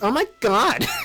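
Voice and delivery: put-on girl voice.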